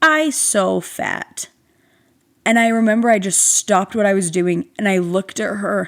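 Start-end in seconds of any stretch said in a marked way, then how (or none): 0.0-1.5 put-on tiny, childlike little toddler baby talk. Retelling what a toddler said looking in the mirror: imitating a baby toddler voice. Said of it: "in her little baby, you know, baby toddler voice".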